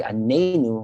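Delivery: Anenu with stress on the second syllable.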